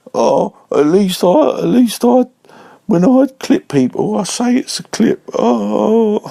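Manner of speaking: play-acted very high, slow, tearful, crying plea. Retelling how someone begged while crying: imitating someone crying. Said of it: "he's crying like".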